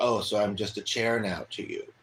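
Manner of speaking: ordinary talk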